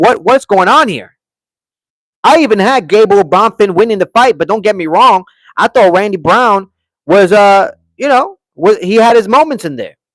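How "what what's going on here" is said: half-shouted, mild outraged yell in disbelief. Recounting watching a fight, retelling screaming at the referee. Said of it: "I'm screaming at the referee like".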